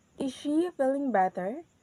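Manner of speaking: rising pitch on the words feeling and better. Demonstrating a rising intonation example question, rising pitch on feeling and better. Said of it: "our voice is goes up at the word feeling and bitter".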